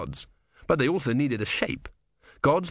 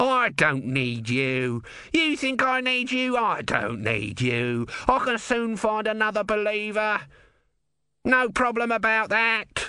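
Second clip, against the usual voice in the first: high-pitched, loud shouted yell; 9 semitones higher than usual. Narrator voices Om calling after Brutha as he fades into the haze, shouted. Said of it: "shouted Om".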